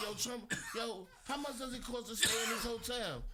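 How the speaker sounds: put-on excited kid's voice, high and laughing, calling out.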